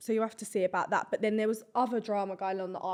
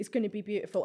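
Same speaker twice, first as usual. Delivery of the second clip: ordinary delivery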